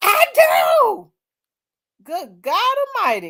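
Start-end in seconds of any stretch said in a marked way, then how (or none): 0.0-1.1 very high, emotional shout, belted out with feeling. Retelling how Shannon Sharpe answered: imitating Shannon Sharpe saying it with emotion. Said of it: "But the way he said that".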